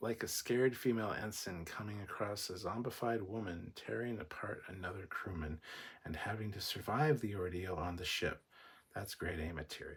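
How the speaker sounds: ordinary talk, nothing marked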